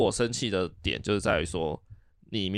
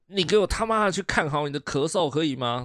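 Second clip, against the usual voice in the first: loud, high-pitched, out-of-control scolding yell; 7 semitones higher, 4 dB louder than usual. Speaker retells shouting at their mother: retelling a loud yell. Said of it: "我就是大声的吼了一下".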